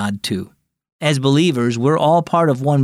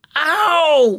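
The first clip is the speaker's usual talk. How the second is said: very high, drawn-out, stretched pained "ow"; 13 semitones higher than usual. Adeline, having slammed her toe into a chair leg, crying out in pain. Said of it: "she cried".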